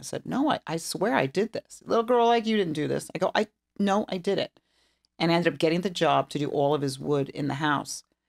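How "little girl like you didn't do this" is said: put-on broad Texan accent, quick, pitched-up drawl. Retelling how Don reacted to her woodwork, in Don's Texas accent. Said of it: "his very Texas accent".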